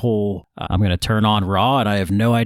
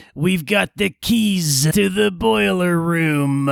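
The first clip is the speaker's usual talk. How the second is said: mocking high voice, the word "keys" drawn out; 9 semitones higher than usual. Retelling a promo line done in The Rock's mocking voice: The Rock's mocking Triple H voice. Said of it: "he did it in the voice that The Rock uses to make fun of Triple H".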